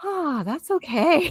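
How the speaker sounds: very high, sighing, reassuring voice. Imagining many moms hearing what was said: imitating moms sighing. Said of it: "a lot of moms, like, sighing".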